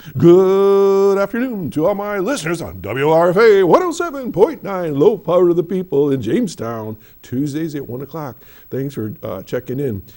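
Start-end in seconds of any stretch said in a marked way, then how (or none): 0.1-8.4 high, loud radio announcer voice. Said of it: "I'm gonna do my radio voice".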